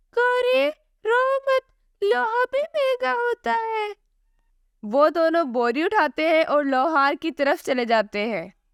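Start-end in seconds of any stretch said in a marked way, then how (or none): 0.2-4.0 very high, soothing, consoling cartoon crow voice. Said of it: "एक जंगल में कौवा और कौवी रहते थे। वो दोनों बहुत ही लालची थे। / एक दिन कौवा और उसकी बीवी लकड़ियां काट रहे होते हैं तो उसकी बीवी कहती है".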